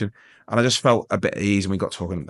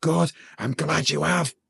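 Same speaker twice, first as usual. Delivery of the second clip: mock ragged, rough, high-pitched shouted scream; 8 semitones higher than usual. Retelling shouting back at a woman who had called an ambulance, imitating a scream. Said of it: "Like scream, at her".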